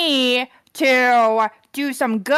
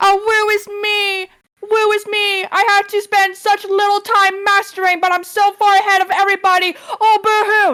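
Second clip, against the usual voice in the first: mock self-pitying whine; 7 semitones higher than usual. Mocking John, who wants the group's vote, mock-whining like John. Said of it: "That's what you sound like".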